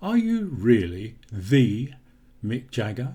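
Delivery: the stretched and emphasised. Showing how to stress a sound to ask something specific, stress on the. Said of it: "if I want to stress the sound, when I want to know something specific".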